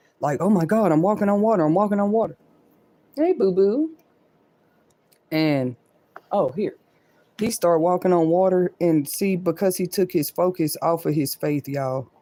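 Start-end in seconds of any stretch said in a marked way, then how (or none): 0.4-2.4 put-on panicked voice, higher pitch. Retelling a bible story about walking on water: imitating someone freaked out. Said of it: "freaked out".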